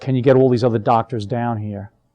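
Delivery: put-on whisper. Retelling what the doctor said on a phone: imitating a whisper. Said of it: "she whispered".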